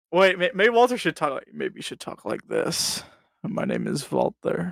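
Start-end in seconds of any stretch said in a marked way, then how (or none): 3.4-4.7 creepy put-on voice, quieter and slower. Suggesting to the others how Walter should talk on the podcast, creepy voice as Walter. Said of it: "He sounds like he wants to touch me".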